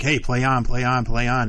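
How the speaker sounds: ordinary talk, nothing marked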